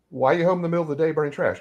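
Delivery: play-acted, really sarcastic, pointed, high voice. Retelling questioning a father who burned a letter: retelling own sarcastic remark. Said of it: "And I got really sarcastic".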